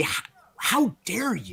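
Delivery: slow, offended, affronted, indignant huff. Voicing a snarling monster whose head was whacked: indignant.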